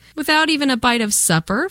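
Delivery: gentle teasing. Father teases the tired girls after they are woken up, teasing. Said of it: "Father teased".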